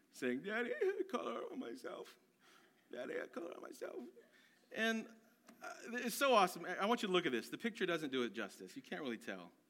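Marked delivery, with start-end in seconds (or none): 0.5-4.0 put-on soft, breathy, near-crying little whimper, childlike. A father retells his son coming downstairs after his sister told on him, imitating a whimpering, near-crying child. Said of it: "in a little whimpering, almost crying voice".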